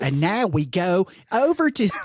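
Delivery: put-on extreme Baltimore accent. Imitating the narrator they're discussing, in a really extreme Baltimore accent. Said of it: "Really extreme Baltimore accent is what he's doing".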